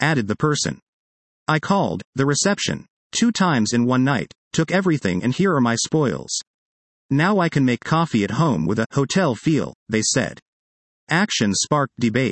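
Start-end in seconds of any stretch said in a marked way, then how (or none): none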